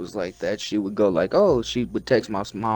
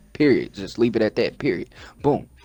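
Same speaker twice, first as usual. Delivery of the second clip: plain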